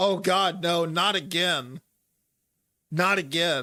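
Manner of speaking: loud drawn-out panicked screaming. Voicing a character in a state of panic: panicked scream. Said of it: "clearly in a state of panic. He screams".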